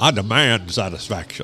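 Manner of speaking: put-on old-South gentleman's accent. Showing how a phrase sounds said like a southern gentleman, southern gentleman accent. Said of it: "if you could say it like a Southern gentleman".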